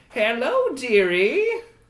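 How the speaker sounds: put-on high, sinister, wicked old crone voice. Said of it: "she smiles wickedly at all of you and then looks at Orlando and says".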